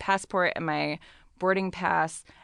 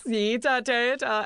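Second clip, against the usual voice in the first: fake German gibberish, very slow, high, drawn out; 6 semitones higher than usual. Retelling what another man at the gate said: fake German gibberish. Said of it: "I'm gonna do German gibberish".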